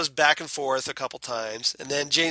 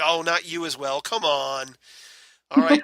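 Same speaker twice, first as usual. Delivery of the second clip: incredulous, disbelieving delivery; 3 semitones higher than usual. Retelling a comedy sketch scene: imitating incredulous character. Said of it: "he's all incredulous".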